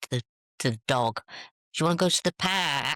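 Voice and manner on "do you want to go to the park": real northern English twang on the vowel in "park". Showing how the word park sounds when talking to the dog: northern twang on "park". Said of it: "a real northern twang on the w-, on a park".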